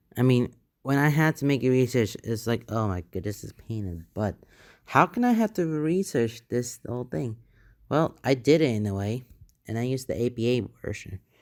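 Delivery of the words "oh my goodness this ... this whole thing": usual speaking voice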